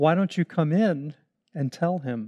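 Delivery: gentle, soft, kindly spoken. Retelling a priest inviting a screaming woman inside, retelling a kind, soft voice. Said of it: "in a kind and soft voice".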